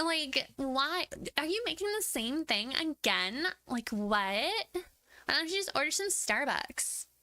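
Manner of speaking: put-on high, slow, whiny Valley Girl voice. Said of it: "doing that voice".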